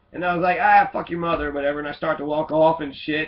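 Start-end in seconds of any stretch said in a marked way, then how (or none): none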